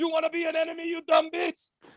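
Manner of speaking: put-on Middle Eastern accent. Retelling the voicemails a woman played, voiced by a man: Israeli Middle Eastern accent. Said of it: "in that Israeli, like fucking Middle Eastern voice".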